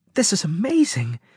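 full of delight. A character seeing a strange walking creature up close, delighted. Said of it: "Natasha said in a delighted voice".

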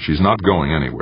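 ordinary delivery, nothing marked

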